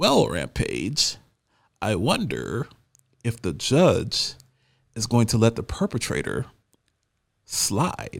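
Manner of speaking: voice drops to a put-on hush. Commenting on a news caption, using a David Caruso voice. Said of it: "using my David Caruso voice".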